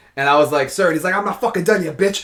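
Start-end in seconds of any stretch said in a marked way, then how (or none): 1.2-2.3 mock officer voice, high, aggressive, tearing rant. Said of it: "going hard on me".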